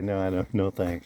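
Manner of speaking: normal talking voice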